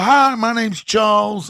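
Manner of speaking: bad, unconvincing put-on American man's accent. Retelling meeting a fellow prisoner in the prison library, bad American accent. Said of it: "I can't do an American accent to save your life".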